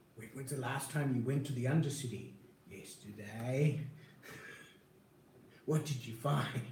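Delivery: hushed whisper. Questioning someone about their last trip to the undercity, whispering. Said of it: "You're whispering".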